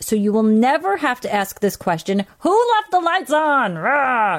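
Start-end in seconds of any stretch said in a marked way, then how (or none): 2.4-4.4 cross, angry scolding voice, pitched up. Announcing an on-air giveaway, asking the lights question in an angry parent voice. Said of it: "In your angry parent voice".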